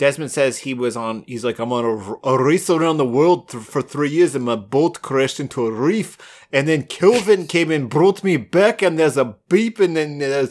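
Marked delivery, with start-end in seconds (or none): 1.6-10.5 put-on Russian-sounding accent. Retelling a TV scene, quoting a character: Russian-sounding accent. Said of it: "that's Russian".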